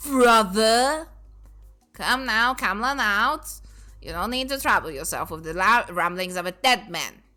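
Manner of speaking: smooth, fluid, liquid flowing character voice. Voicing the older brother character, in a liquid voice. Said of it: "I'm gonna do a like liquid voice for him".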